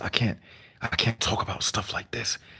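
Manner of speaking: whispered, hushed, barely voiced. Showing how he would have to talk in a business environment: whispering. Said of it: "I have to whisper when I'm talking like this".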